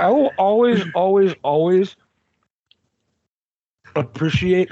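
talking with mouth full. Mid-conversation while eating lunch, apologizing afterwards: talking with mouth full. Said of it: "Sorry, I'm eating lunch".

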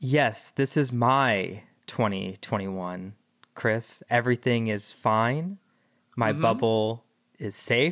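mock calm and collected, serene tone. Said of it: "you're sounding, um, very calm and collected right now".

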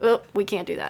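mock sarcastic tone. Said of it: "working on my sarcasm".

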